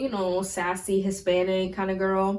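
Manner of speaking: normal talking voice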